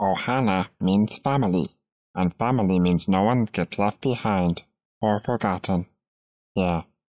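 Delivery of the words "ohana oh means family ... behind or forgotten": small alien creature voice. Urged by the others to do the Stitch, the speaker does a Stitch voice. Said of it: "You got to do the Stitch".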